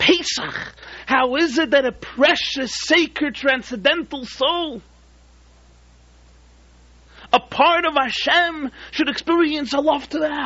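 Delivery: voice lifted. Storyteller quoting the rebbe rebuking his follower a third time, retelling a raised voice. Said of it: "raised his voice".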